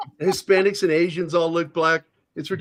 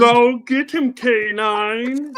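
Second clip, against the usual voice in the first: the word "nine" drawn out and stretched; 6 semitones higher than usual. Joking along after another speaker suggests it: Marvin the Martian voice. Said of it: "talked like Marvin the Martian".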